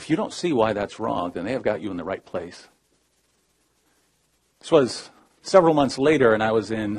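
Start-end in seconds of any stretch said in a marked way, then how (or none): 0.0-2.7 put-on calm delivery. Retelling what a hospital administrator told him, imitating someone speaking calmly. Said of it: "very calmly".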